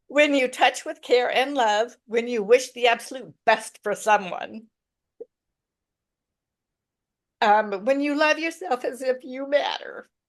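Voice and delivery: speaking tearfully, crying through the words. Reflecting aloud on love and care with a co-speaker, crying while talking. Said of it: "I don't know why I'm getting crying".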